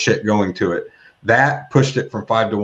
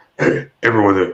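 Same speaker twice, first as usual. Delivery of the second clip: put-on gruff voice; 3 dB louder than usual. Reading out an email from Mike Long to the group: imitating Mike Long's gruff voice. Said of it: "he's got a real gruffy voice".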